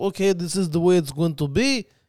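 put-on Russian accent. Imitating a mover who looked at the house: russian accent. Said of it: "This is my Russian accent".

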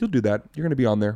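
put-on very casual, cavalier, offhand tone. Retelling a mother predicting comedy success: imitating a very casual, cavalier tone. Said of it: "very casual, you know, like, cavalier".

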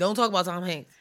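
playful, jokingly worked-up, fake heated outburst. Insisting no one talk about a favourite actor: mock heated outburst. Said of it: "Calm down".

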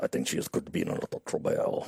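put-on French accent, pitched low.

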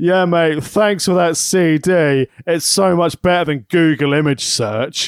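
put-on unhurried, slow, deliberate, drawn-out delivery. Retelling what he said in the Tesco alcohol aisle, imitating someone talking loudly. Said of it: "he said really loudly".

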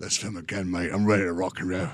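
low, hushed, soft, unbothered action-hero voice. Retelling a film-set story as Jason pops out of the truck: Jason Statham impression. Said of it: "That's a pretty good Jason Statham".

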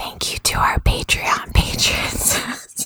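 soft ASMR-style whisper.

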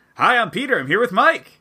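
very high-pitched put-on voice. Doing a podcast intro as the co-host: imitating Peter. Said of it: "That was a pretty good impression".

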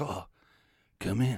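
jazzy put-on jazz-man voice. Recalling a man at the top of a quiet room inviting them in, jazz voice. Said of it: "the jazz voice".

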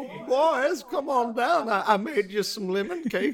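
put-on very high old grandma voice, calling out. In a bit about lemon cake, the host plays Grandma calling the boys down.

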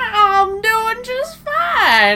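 very high, loud, drawn-out swooping voice. Answering a best friend's "how are you": Bill Cosby voice. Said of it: "I'm talking like Bill Cosby".

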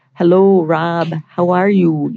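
North Dakota accent, stretched vowels, held O. Guest asked what the accent sounds like, demonstrating a North Dakota accent. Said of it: "What does it sound like?".

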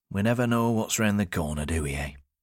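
ordinary delivery

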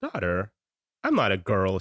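teasing, playful, sing-song tone. Reading a story aloud, quoting the child's reply: imitating a playful voice. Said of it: "she says in her playful voice".

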